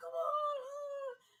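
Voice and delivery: urgent, very high, loud shouted scream. Recounting a movie where a man at the altar screams to her; retelling a scream. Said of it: "he's just like screaming at her like".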